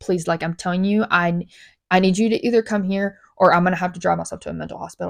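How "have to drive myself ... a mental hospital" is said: normal talking voice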